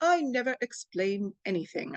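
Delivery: bad, terrible put-on British accent. Speaker quoting a famous line while discussing living with pain, in a terrible Mary Poppins British accent. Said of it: "I have a terrible British accent".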